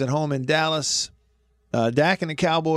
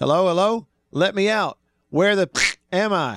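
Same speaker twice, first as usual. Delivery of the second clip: put-on thick Irish accent, much higher; 4 semitones higher than usual. Retelling a pre-recorded message played at a funeral, imitating Shay's thick Irish accent. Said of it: "in that thick Irish accent".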